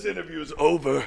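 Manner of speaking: gruff villain voice, very high, rasped, final-sounding. At a comic con interview, the voice actor ends the interview in a Vegeta voice. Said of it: "if I do the voice of Vegeta".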